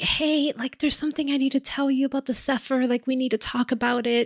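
high-pitched, meek pleading voice. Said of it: "very meekly".

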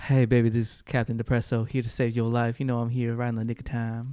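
deep, low, soothing smooth-talking voice, projected. Another player announces Captain Depresso is here to save the day; Captain Depresso soothing voice. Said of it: "Fuck his soothing voice".

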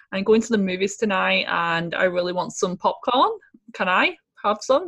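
ordinary delivery

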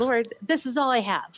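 put-on, high, desperate crying out at wits' end. Retelling a sleepless night at three in the morning: imitating own past yelling. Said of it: "yelling at him and saying".

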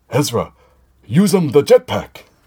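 deliberately bad, high, loud, swooping cartoon-character voice. Recapping a scene from a show, giving a character's order, Captain Tarpals impression. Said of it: "that was my Captain Tarpal's impression".

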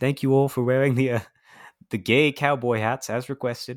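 put-on British accent, pop-star stage patter style. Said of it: "that's how I hear him in my head".

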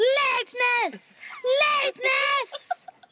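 very high, screamed call-out. Retelling how the bus driver honked and screamed the speaker's nickname, imitating bus driver screaming. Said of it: "he'd be screaming".

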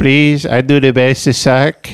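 put-on speech with an Albanian accent. Joking as a worker at Home Depot: put-on Albanian accent. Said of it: "Albanian guy".

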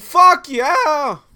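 very loud, very high yell, voice breaking upward. Doing one more take of the Paco's Tacos line: voice cracking. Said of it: "I cracked my voice just for you".

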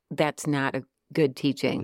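ordinary talk, nothing marked

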